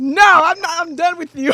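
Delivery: playful yelling, loud and high-pitched.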